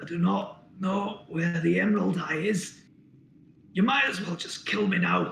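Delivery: pained, slow croaking voice. Narrator voicing a captive dwarf who thinks you are his jailer, croaking. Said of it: "he croaks".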